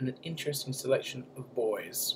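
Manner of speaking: voice drops right down. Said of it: "Why did you say it like that?".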